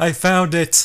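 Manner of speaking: shrill, very high, loud screaming shriek. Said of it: "you hear a voice scream".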